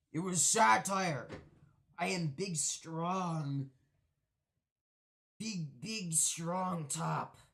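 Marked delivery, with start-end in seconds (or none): 2.0-7.3 fake macho voice, deep, strong, slow, drawn out. Joking about being dominant, in a put-on man voice. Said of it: "Your man voice came out?".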